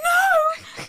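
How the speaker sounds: shrill, very high, full-volume hysterical screaming. Speaker retells finding a cut-off ponytail at the top of her stairs: retelling a hysterical scream. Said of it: "I'm screaming, no, no, like hysterically".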